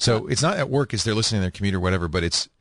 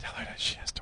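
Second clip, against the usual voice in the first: breathy, hushed whisper, very quiet, barely audible. Asking the other speaker to pass a job offer on: whispering. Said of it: "She can't hear me 'cause I'm whispering".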